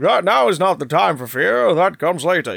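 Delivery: unfiltered, crisp, well-spoken RP delivery. Repeating the line with the filter removed: Bane voice without the filter. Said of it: "You remove the filter".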